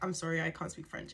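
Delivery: plain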